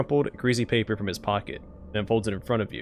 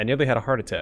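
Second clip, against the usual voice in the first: ordinary talk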